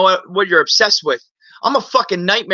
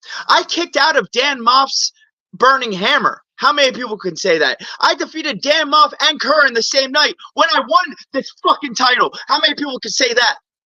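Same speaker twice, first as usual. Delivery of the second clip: high, amped-up, fired-up boasting; 6 semitones higher than usual. A wrestler cutting a promo about his title run, fired up. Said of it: "but I'm fired up right now".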